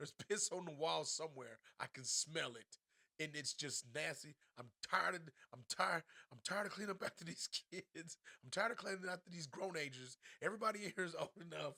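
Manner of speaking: acted, exasperated, fed-up complaining rant. Retelling how she complains about a dirty bathroom: imitating her complaining. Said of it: "She's like".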